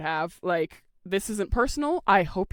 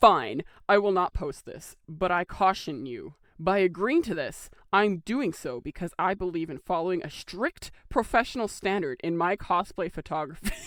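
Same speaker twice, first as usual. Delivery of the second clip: put-on, very snarky, cutting tone. Reading a cosplay photographer's message aloud, imagining him typing it; mock-snarky tone. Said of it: "So in a very snarky tone".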